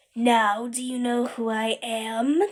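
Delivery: screechy, sneering monster voice. The creature that used to be a teacher sneers at the terrified narrator, screechy. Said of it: "Her voice is screechy".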